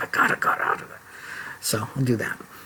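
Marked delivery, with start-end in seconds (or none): 0.0-1.0 soft, muttered, whispered aside. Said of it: "I'm just like".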